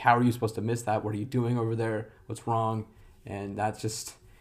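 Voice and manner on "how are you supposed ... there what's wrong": ordinary delivery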